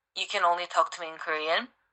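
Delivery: plain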